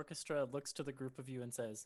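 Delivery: ordinary delivery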